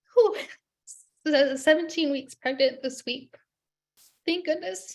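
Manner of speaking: talking through tears, tearful, crying. Telling the story of her fourth embryo transfer, crying while talking. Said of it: "and I'm now gonna cry".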